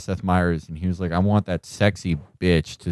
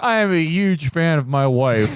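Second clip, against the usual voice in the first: very high, raging, outraged squeal; 9 semitones higher than usual. Mocking a husband's public outburst: mock raging Ben Domenech impression. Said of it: "acting job of the year, Ben Domino".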